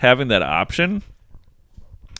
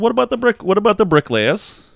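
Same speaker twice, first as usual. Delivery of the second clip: squeaky raised put-on voice. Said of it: "Has he got a British accent".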